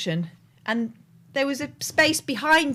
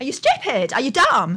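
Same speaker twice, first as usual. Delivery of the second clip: loud, rude, bratty schoolkid jeering voice; 5 dB louder than usual. Imitating a rude school kid shouting at a driver: imitating a school kid's voice. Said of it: "the standard voice of those school kids".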